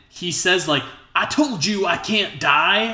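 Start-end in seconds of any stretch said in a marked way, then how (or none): 1.1-3.0 put-on thickest possible American accent, high and slow. Retelling a villain's one-liner from the movie: imitating Isaacs's very American accent. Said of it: "in, like, the most American accent ever".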